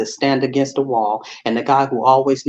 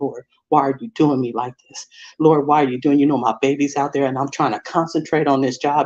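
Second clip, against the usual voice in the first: tearful, crying voice. Retelling praying alone in an elevator: reenacting a tearful prayer. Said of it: "I'm crying".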